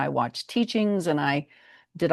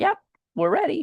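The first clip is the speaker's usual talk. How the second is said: much higher pretend dog voice. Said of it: "they came up to me and were like".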